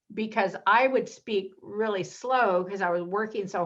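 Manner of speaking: ordinary talk, nothing marked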